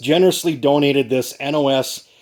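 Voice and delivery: normal talking voice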